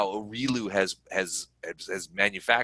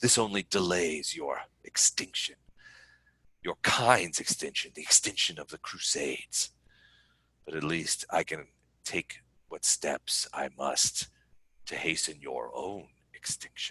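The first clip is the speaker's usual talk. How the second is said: beautiful, enticing, seductive delivery; 5 semitones lower, 7 dB quieter than usual. Voicing a demonic former succubus taunting the players: beautiful enticing voice. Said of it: "she says in this beautiful voice".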